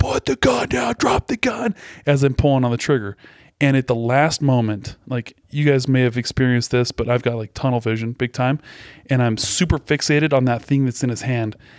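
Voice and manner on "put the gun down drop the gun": mock, ragged, raw screaming, very high. Recounting yelling at a man holding something in his hand, retelling a scream. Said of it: "I'm screaming out".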